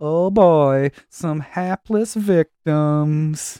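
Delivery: very slow, drawn-out cartoon ghost voice. Retelling a cartoon episode's opening, imitating the cartoon ghost. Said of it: "That's a good impression".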